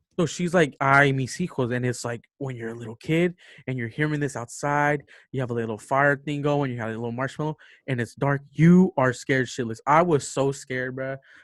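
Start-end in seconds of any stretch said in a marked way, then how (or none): none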